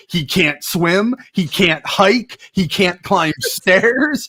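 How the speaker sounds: slow, drawn-out mocking listing delivery.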